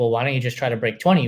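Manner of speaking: said with open sarcasm. Retelling what someone at a race said: imitating a sarcastic remark. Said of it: "being sarcastic".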